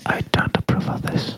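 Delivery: breathy unvoiced ASMR-style whisper. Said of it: "you need to whisper".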